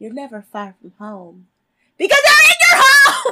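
animated, very loud, swooping yell. Retelling a show moment in Tyra Banks's voice: yelling as Tyra Banks. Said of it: "I just yelled into the mic".

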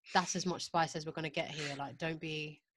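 ordinary talk

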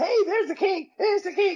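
tiny, very high little voice. Recalling a wrestling fan greeting him backstage: imitating a high little voice. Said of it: "I had the little high voice".

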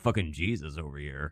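very quiet put-on movie character voice. Imagining Jesus in a movie, the speaker does a put-on movie character voice. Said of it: "It's my impression of a Kevin Smith character".

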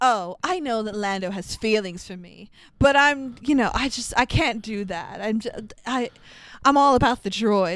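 ordinary talk, nothing marked

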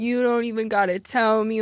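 really bad, put-on Italian accent. Retelling what someone said: bad fake italian accent. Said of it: "a really bad, like, fake Italian accent".

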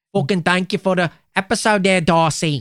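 Manchester accent. Host thanks a listener from Manchester for suggesting the episode, put-on Mancunian accent. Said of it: "We're doing our best Mancunian accents now".

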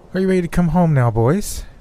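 haughty, arrogant tone, very high-pitched. Narrator reading a woman's line to the boys, in an arrogant tone. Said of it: "She said with more arrogance in her tone".

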